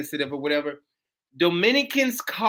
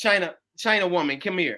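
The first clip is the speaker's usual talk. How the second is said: ordinary talk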